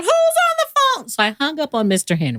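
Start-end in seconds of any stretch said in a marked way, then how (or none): 0.0-1.1 squeaky, very high-pitched call. Retelling a phone call the speaker's mom interrupted, squeaky mom voice. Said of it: "squeaky voice mom".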